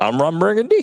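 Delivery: lifted, rising question-like tune on the final word. Joking about a co-host's rising delivery: Ron Burgundy question-mark delivery. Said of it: "like a question mark, like".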